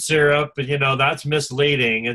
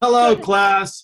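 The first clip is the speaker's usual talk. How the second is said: professorial lecturing voice, pitched up; 5 semitones higher, 4 dB louder than usual. Showing how they greet the class, the speaker sounds professorial. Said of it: "I like to be professorial".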